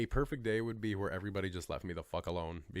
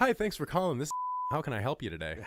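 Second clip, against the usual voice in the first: polite, pitched-up, sing-song phone voice; 6 semitones higher, 4 dB louder than usual. Showing the voice they use answering calls: polite customer-service phone voice. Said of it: "I literally I got the voice down".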